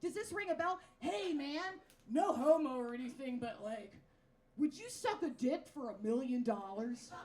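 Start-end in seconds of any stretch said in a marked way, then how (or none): 1.0-7.1 put-on drunk bro voice, lower pitch. Retelling what drunk straight guys ask their friends: imitating a drunk straight guy. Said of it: "when you get drunk around your other straight friends".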